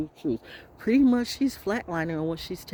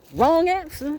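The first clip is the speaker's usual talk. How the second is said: shrill, high, loud, pronouncing voice; 11 semitones higher, 6 dB louder than usual. Mid-rant, the speaker switches into a Judge Mathis voice. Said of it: "In my in my in my in my Judge Mathis voice".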